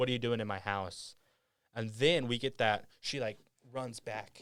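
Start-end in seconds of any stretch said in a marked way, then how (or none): none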